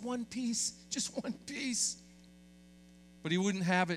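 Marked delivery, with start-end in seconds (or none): 0.0-2.0 hushed, pleading whisper. Act out a mom speaking to her son as he waves candy, imitating a mom whispering. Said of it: "his mom looked over and whispered".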